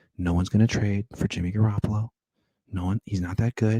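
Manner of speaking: low, hushed golf-broadcast commentator voice. Talking about quarterback trades, switching into a golf announcer voice. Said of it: "I'm going golf announcer voice right now".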